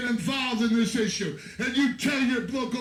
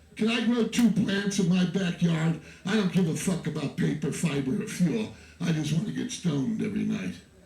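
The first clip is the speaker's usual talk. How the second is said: low, meek, mock begging voice. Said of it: "you can't go up there and say".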